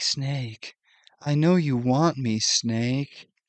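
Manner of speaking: weird, odd, very slow, drawn-out voice. Retelling a game scene where Meryl comes on to Snake, imitating Meryl's weird come-on. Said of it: "like in a really weird way".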